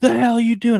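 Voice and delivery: play-acted very high, pissed-off, demanding tone. Telling a story about a driver confronting him, imitating an angry man. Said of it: "he's all pissed off and he's like".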